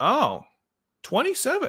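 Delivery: voice breaking very high on 27. Speaker repeating the answer to their own question, voice cracking. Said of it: "my voice is cracked there".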